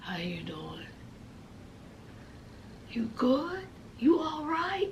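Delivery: whispered, breathy, try-hard raspy sexy voice. Retelling Gabby's phone call, voicing the guy who answers: mock raspy, sexy voice. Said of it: "In that little trying to be raspy, sexy voice".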